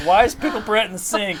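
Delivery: high-pitched, indignant, angry outburst. Retelling finding Pickle Brent in the sink: imitating own mad reaction. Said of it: "I was so mad".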